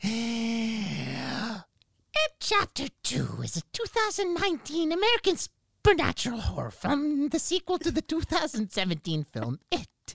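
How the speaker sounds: high, swooping creepy clown voice, drawn-out "It". Speaker reads out a film description, doing a Pennywise impression. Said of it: "I'm going to make my impression of what I think Pennywise sounded like".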